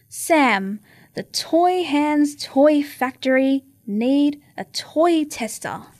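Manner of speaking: plain reading voice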